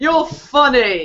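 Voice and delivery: bursting into laughter, laughing through the words. Pretending to love a god's story in case anyone's watching, bursting out laughing while talking. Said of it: "burst out laughing and go".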